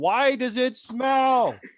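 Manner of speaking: mock, very high, stretched-out shout. Repeating the question just yelled at the driver: repeating a yell at the driver. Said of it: "I literally yelled at the driver".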